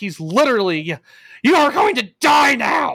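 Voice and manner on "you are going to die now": over-the-top, high-pitched, theatrical dramatic yell. Retelling a wrestling match, imitating Paul Heyman yelling dramatically. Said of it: "Paul Heyman's being very dramatic".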